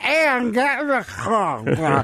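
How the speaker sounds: put-on sloppy drunk slur, slow, "car" stretched out. Retelling how a drunk father ordered a child into the car: imitating a drunk slurring father. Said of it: "so drunk that he couldn't say our names".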